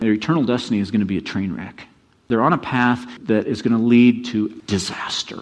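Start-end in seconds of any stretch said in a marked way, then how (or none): none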